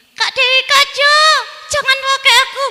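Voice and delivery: shrill, very high, very loud ventriloquist thrown voice. Demonstrating voice throwing by making the microphone talk, ventriloquist talking-microphone voice. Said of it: "sulap suara ... menggunakan suara perut".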